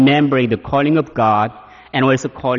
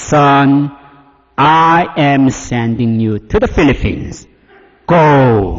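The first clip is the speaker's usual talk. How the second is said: thunderous, glorious, slow, strong, majestic voice, go drawn out; 4 dB louder than usual. Retelling the voice he heard calling him, strong magnificent voice. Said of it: "It's like a strong voice, but very magnificent".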